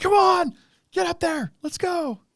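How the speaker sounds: very high, drawn-out put-on cheering scream. Retelling cheering at the tv during a race: imitating own screaming. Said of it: "screaming at the T V".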